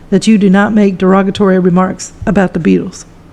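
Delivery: ordinary talk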